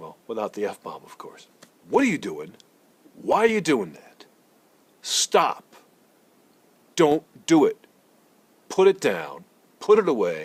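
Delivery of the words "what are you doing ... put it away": play-acted, loud, pitched-up scolding voice. Imitating what the kind of dad he often is says to the children: imitating own scolding of children. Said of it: "The kind of dad I often am will say".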